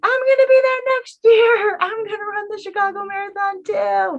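shrill, loud, high-pitched cheering yell. Recounting cheering at the Chicago Marathon, the speaker repeats what they yelled; retelling a yell. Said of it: "at one point I was yelling".

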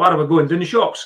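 put-on Scottish Dundee accent. Speaker retells JD answering a player at the face-off, JD's Dundee accent. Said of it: "he's pure Dundee accent".

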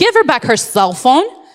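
firm, stern scolding mom voice. Retelling ordering a man to give a woman's phone back, in a mom voice. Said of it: "And I said it in a very, like, you know, mom voice".

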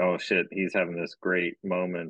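normal talking voice

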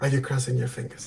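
soft, hushed, close half-whisper. Voicing a character who notices crossed fingers during a kiss: half-whispering in character. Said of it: "he'll be whispering".

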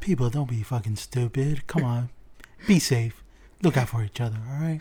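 whispering close to the mic. Speaking a message close to the mic for listeners: whispering close to the mic. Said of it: "No, I'm gonna whisper".

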